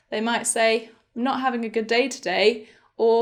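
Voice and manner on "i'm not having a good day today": usual speaking voice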